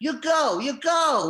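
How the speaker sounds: loud, slow put-on Mexican accent. Retelling a woman banging on the door: imitating a Mexican woman's accent. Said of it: "some Mexican woman banging on the door going".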